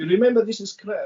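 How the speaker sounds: cartoonish, exaggerated Eastern European accent. Quoting a first Krav Maga instructor from when the speaker started: Boris and Natasha voice. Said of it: "in that Boris and Natasha voice".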